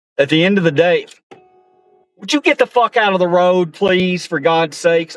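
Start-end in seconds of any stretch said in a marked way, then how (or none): 2.2-5.1 angry, pitched-up, raging yelling. Driving and yelling at a slow driver in the road: road rage yelling. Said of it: "got a little road rage".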